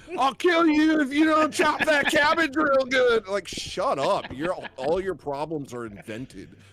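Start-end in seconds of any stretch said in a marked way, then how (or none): 0.1-3.2 very high, shrill, loud, hollering chef voice. Mocking kitchen staff who yell at each other: imitating a yelling chef. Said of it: "We yell at each other".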